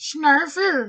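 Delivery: very high, squeezed, narrow character voice. Voicing the character from the episodes, in a Snarfer voice. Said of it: "He's a little bit higher voice, a little bit narrower".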